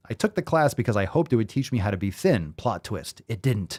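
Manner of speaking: ordinary talk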